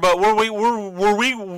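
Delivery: slow, halting stutter. Playing a card game, asking the other player a question, stuttering. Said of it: "sorry, I'm uh, stuttering".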